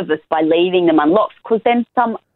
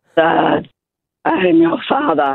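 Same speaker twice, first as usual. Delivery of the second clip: spooky, put-on scary voice with swooping pitch. A dad talks through a baby monitor to his two-year-old son, in a scary voice. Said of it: "really scary. Voice".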